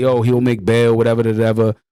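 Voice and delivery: ordinary talk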